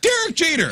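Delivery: squeaky, very high-pitched shout. Retelling yelling at a baseball player in passing: imitating a high-pitched yell. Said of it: "in the highest pitched voice that I could muster".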